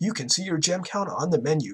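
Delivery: ordinary delivery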